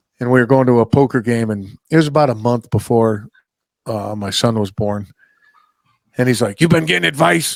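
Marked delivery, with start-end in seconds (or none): 6.6-7.6 worn, longtime smoker's voice. Walking through a casino to a poker game, the speaker quotes Paulie: imitating Paulie's smoker voice. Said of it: "he talks like this because he's been smoking and drinking for so long".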